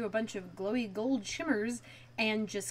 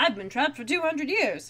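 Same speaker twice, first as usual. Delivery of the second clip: put-on affected, raised, old-timey nineteen-forties film voice; 4 semitones higher, 6 dB louder than usual. Retelling what a character says on learning it's 1999, in a forties voice. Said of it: "apparently I'm doing the forties voice".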